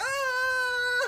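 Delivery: imitated screaming. Narrating a character swarmed by chickens: imitating a scream. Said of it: "as we hear a scream from Habibi. He's like".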